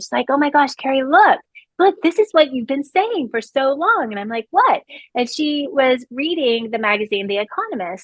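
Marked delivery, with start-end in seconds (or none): 0.3-4.1 put-on thrilled, excited, bursting, pitched-up gushing. The speaker retells her mom coming in with a magazine, imitating her excitement. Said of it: "She's all excited".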